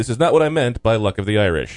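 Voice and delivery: ordinary talk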